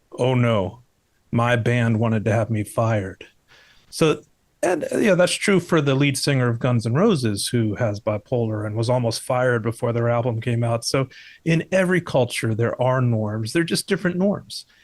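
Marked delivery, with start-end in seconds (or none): 0.2-3.3 flat, expressionless delivery. Retelling a patient's reply about his band: imitating a deadpan reply. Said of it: "he looked at me deadpan and said".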